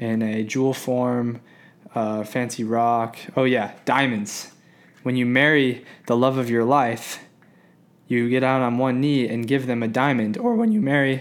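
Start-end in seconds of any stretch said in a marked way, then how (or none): 10.4-11.2 voice breaking and cracking mid-phrase. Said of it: "that was a voice crack".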